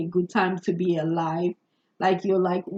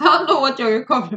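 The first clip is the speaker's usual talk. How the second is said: speaking through laughter, higher and louder; 6 semitones higher, 7 dB louder than usual. Reading for listeners and breaking into laughter: laughing while talking. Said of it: "I don't mean to laugh".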